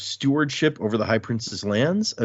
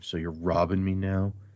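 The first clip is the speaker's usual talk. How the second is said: put-on petty mumble, lower, quieter; 5 semitones lower, 6 dB quieter than usual. Retelling a story where Rashom, in the corner, reacts to being robbed: mock-petty Rashom mumble. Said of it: "it is very, uh, like, petty".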